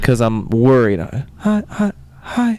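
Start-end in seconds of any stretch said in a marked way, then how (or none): 1.4-2.6 high, timid, small little voice. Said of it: "in my timid little voice".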